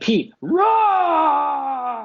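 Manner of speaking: loud, high, stretched-out rawness. After asking whether he scared someone, the speaker does a mock-scary Cookie Monster voice. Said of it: "my impression of me being scary and a little bit Cookie Monster".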